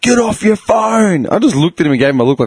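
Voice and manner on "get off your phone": put-on, high, drawn-out screamed shout. Retelling a driver screaming through his car window: imitating someone screaming. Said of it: "he's screaming at me through his window".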